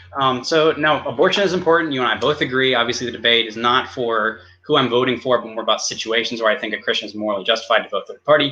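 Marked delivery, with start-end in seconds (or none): 5.4-8.5 really fast, rapid-fire talking. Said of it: "I'm talking as fast as Ben Shapiro".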